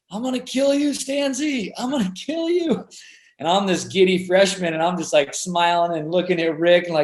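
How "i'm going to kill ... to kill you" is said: rowdy, high, rising screaming. Retelling a guy heard from the locker room before a game: retelling a guy screaming. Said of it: "this guy just screaming".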